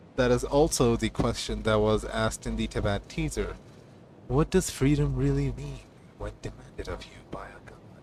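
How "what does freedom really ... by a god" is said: put-on sexy, seductive character voice. Discussing a game teaser, quoting its question in a sexy Dainsleif voice. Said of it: "Said Dainsleif in his very sexy voice".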